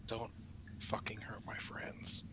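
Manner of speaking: barely audible, very quiet whisper. Speaking in character after hitting a hobgoblin: said very quietly. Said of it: "say very quietly".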